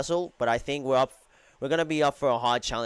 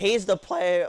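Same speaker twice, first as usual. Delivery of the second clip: high voice cracking and breaking mid-word; 7 semitones higher, 4 dB louder than usual. Commentating a soccer match just after a goal, voice cracking. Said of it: "Sorry, voice crack".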